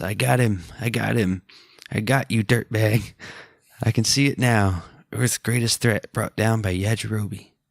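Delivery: ordinary talk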